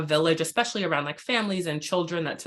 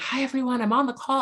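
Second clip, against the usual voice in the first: mock whisper, higher; 7 semitones higher than usual. Retelling joining a meeting while a son sleeps: imitating own whisper. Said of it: "whispering, 'cause my son's sleeping".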